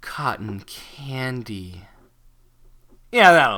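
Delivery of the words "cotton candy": very quiet, low, sultry whisper, "candy" stretched out. Narrator reads a line whispered into Pinky's ear, sexy Fluttershy voice. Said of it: "a sexual Fluttershy saying cotton candy".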